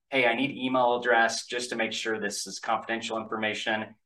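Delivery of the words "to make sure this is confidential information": ordinary talk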